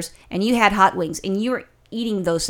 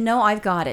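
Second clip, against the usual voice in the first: usual speaking voice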